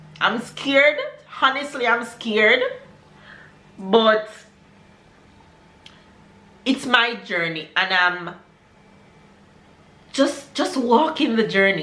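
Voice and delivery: voice full of feeling, open and candid. Talking about an uncertain decision and its unknown outcome, getting emotional. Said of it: "I'm getting emotional".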